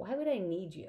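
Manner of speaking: cutting, harsh, sharp. The narrator answers a boy who offered to help, harsh. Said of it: "It came out harsher than I meant it to".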